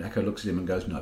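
ordinary talk, nothing marked

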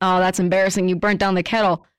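ordinary delivery

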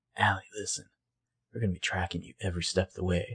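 put-on sensitive, heart-to-heart tone. Retelling a scene where Caleb speaks to Allie: imitating a sensitive voice. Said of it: "he gets his, like, sensitive voice on".

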